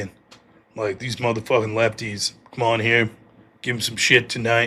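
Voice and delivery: put-on masculine voice. Speaker calls the lefties up front, in a put-on masculine voice. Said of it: "That was just my idea of a masculine voice".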